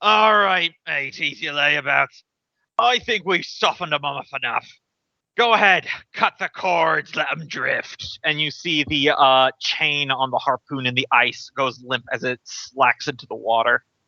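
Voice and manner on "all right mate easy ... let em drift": commanding, bossy dwarvish sailor voice. A game master voices a figure calling from across the water, loud booming dwarf voice. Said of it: "a loud booming voice speaking Dwarven".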